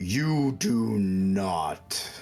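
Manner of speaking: thunderous booming voice, not drawn out. Telling a story where a voice fills your head as you go blind, booming voice. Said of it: "this booming voice goes into your head".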